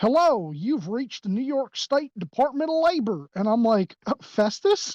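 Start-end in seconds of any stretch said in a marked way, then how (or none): 0.0-3.3 slight, high, light Tennessee twang. Quoting a New York labor department phone agent, imitating a Tennessee accent. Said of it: "he almost has, like, a Tennessee accent".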